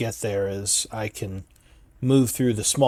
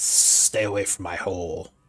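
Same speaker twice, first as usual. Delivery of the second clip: hissing snake voice, lower pitched; 3 semitones lower than usual. A snake answers a party member who speaks with animals, hissing snake voice. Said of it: "It hisses at you".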